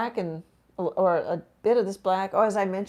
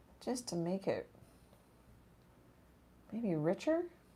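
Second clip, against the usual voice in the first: tentative, unsure, rising at the end; 11 dB quieter than usual. Explaining a paint color choice while painting: unsure, like a question. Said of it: "She says it unsure".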